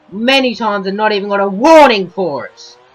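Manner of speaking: high, loud, annoyed ranting. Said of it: "as you can hear, clearly annoyed".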